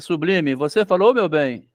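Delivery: ordinary delivery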